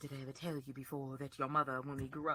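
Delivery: very quiet, creeping half-whisper. Imitating Littlefinger leaning close to Sansa's face: imitating Littlefinger's half-whisper. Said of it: "and he always whisper".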